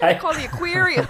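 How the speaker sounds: put-on Boston accent. Imitating men on a boat looking at a sunfish: put-on boston accent. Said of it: "talks about the Boston accent".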